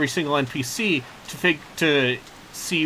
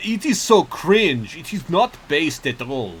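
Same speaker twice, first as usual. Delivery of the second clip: put-on accent sliding between French, British and Russian. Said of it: "What's that accent? You went between French and like British and Russian".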